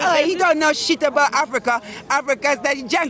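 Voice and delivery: ordinary talk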